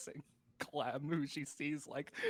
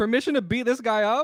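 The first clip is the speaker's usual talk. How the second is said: very loud, high, in-character called-out shout; 8 semitones higher, 15 dB louder than usual. Voicing a character who shouts to Carter for permission: in-character shout. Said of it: "I think she shouts to".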